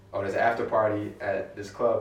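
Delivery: ordinary talk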